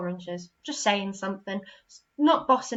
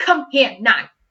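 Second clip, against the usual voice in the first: very loud, bossy tone; 3 semitones higher, 10 dB louder than usual. Explaining sentence types to listeners, giving a bossy command. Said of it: "I was being quite bossy".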